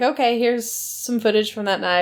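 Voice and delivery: ordinary talk, nothing marked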